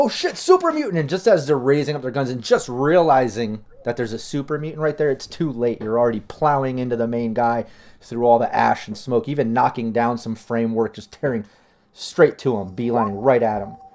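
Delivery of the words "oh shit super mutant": very high, startled, panicked shriek. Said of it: "they're all screaming like".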